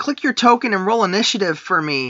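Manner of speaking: plain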